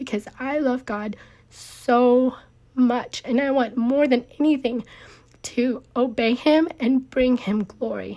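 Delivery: speaking through tears. A speaker talking to listeners while in tears right now. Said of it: "I am in tears right now".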